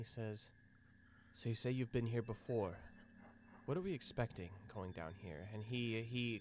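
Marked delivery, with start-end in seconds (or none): 1.3-5.5 quick, theatrical stage half-whisper. A character asking the group what awaits down below, in a half-whisper. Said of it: "he he whispers to the group of you".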